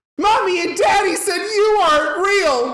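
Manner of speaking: put-on, very high, loud little-kid shouting outburst. Retelling what a scared brother shouted to the class: imitating a child shouting. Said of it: "shouts out for the entire class to hear".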